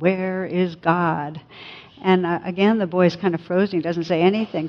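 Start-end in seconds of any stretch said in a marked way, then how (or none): 0.0-1.4 very severe, pressing, even sterner clergyman voice. Telling a story, acting out a clergyman questioning a boy, very stern. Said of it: "says it even more sternly".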